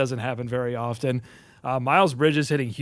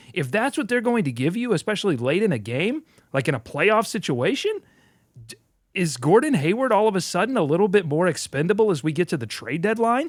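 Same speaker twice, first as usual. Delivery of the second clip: upspeak, each sentence lifting at its end; 5 semitones higher than usual. Asking the other speaker a question after the game, rising inflection on every sentence. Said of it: "I'm going up in inflection in every sentence".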